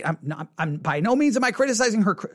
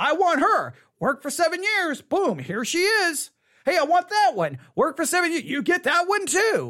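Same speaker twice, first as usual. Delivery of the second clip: light, tongue-in-cheek, put-on sarcastic tone; 5 semitones higher than usual. Retelling a story from a Bible study, with a mock-sarcastic edge. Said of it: "Now I'm using a little bit of sarcasm there".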